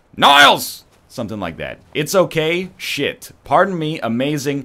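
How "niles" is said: forceful, very loud, high belted voice. Repeating a Frasier Crane impression for the chat: forceful Frasier Crane impression. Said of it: "it'll be like".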